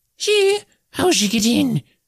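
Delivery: shrill, very high squawking leprechaun creature voice. Narrator reads a leprechaun in a sink reacting to an intruder: squawking leprechaun voice. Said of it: "Squawks the leprechaun in the sink".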